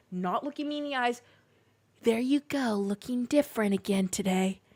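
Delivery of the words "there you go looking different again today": put-on whisper. Retelling what a store worker said into the ear: imitating a whisper. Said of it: "whispering in my ear again".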